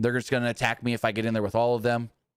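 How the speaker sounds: plain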